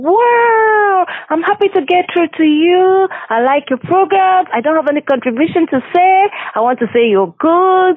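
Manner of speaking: acted, thrilled, very high-pitched excited shouting. Radio host retells a fan who called in shouting, retelling a fan shouting. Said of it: "was shouting".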